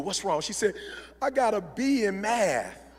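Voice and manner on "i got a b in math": imitated tearful crying voice, quieter. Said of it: "So my daughter's crying".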